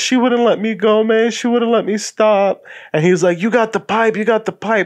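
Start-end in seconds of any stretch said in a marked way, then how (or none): 0.0-2.6 sobbing, blubbering, tearful crying voice. Retelling what a crying guy kept saying, imitating a guy crying. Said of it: "He's crying".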